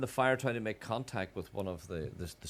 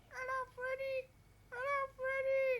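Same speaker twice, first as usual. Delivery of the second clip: eerie small ghost voice, very high and slow; 4 dB quieter than usual. Retelling a voice heard on a recording, wee ghostly voice. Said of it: "You heard a wee ghosty voice saying".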